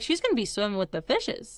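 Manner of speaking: ordinary talk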